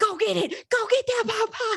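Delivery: pushy, urgent yelling, very high-pitched. Retelling urging her partner to grab a pot pie: imitating her own yelling. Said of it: "I'm yelling at him".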